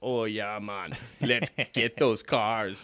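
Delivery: put-on Jamaican accent. Retelling a movie scene where the boat talks: imitating a jamaican accent. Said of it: "the boat itself is a guy with a Jamaican accent".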